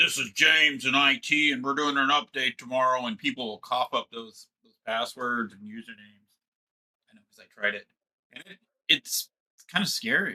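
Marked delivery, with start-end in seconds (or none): 0.0-3.1 commanding, official, confident authoritative voice. Showing how a phone caller posing as IT gets passwords, authoritative voice. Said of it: "have that authoritative voice".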